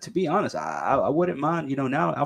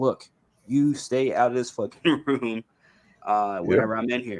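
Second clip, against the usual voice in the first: ordinary talk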